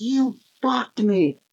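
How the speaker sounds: play-acted all-out shriek at top of lungs, very high. Retelling the moment on pit road, retelling a top-of-lungs scream. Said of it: "I scream at the top of my lungs".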